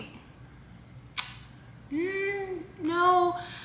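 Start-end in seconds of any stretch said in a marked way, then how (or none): 1.9-3.4 high, skeptical, dismissive tone. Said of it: "And I'm just like".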